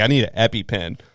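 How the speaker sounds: ordinary talk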